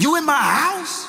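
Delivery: very high-pitched, menacing, threatening tone. Retelling a phone call about a break-in: imitating a bass-voiced threat. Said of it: "Bass in voice, ready to beat somebody down".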